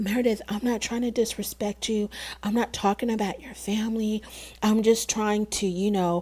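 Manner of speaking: gentle, small, soft-spoken, hushed little voice. Retelling an argument, imitating Whitney speaking to Meredith in Whitney's little soft voice. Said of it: "how she gets into her little soft voice".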